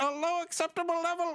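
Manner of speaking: very high, computery, put-on robotic alien voice. Retelling a cartoon scene, imitating a computery alien voice. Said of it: "this guy that talks like this".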